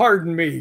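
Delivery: put-on, somewhat mad, irritated tone. Retelling a voice heard on a walkway, imitating someone kinda mad. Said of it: "like, kinda mad".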